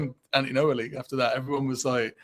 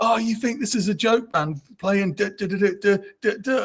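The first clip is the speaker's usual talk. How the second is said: furious, high-pitched screaming rant; 7 semitones higher than usual. Retelling bandmates yelling in the dressing room: imitating bandmates screaming. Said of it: "screaming at me".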